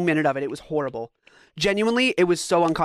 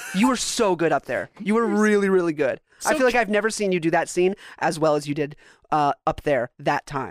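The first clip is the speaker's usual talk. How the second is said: plain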